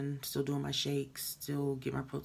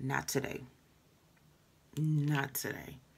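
ordinary talk, nothing marked

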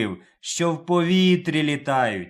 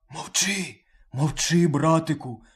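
speaking in a whisper. Narrator voicing the lion speaking to the wolf, whispering. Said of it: "пошепки говорить до нього лев".

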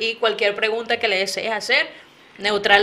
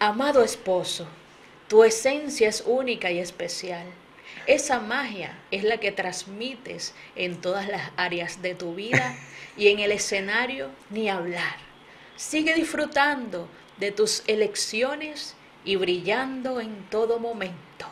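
soft, female, put-on announcer voice; 7 dB quieter than usual. Reading a surprise message addressed to a beloved husband aloud, in a female announcer voice. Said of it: "esto lo tengo que decir con voz de locutora".

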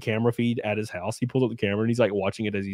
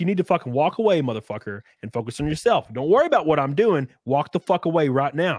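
stoic but raised voice, pitched high; 5 semitones higher than usual. Speaker retells telling off a guy who was yelling at them, retelling stoically raising their voice. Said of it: "I was stoically raising my voice to this guy".

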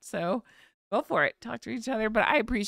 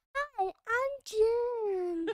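very high-pitched, name drawn out; 13 semitones higher, 4 dB quieter than usual. Pretending to be Jen to say hello to viewers: imitating Jen. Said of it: "think that that was me talking".

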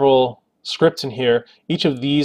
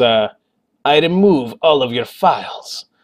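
bad, exaggerated, slow fake Russian accent. Giving a day-to-day scripting example, in a terrible Russian accent. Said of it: "I'm sorry for the terrible Russian accent".

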